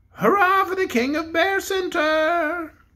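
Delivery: tiny, piercing, high toy-bear voice. A cranked-up pink toy bear turns its head and cheers the king: small, shrill voice. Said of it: "said in a small, shrill voice".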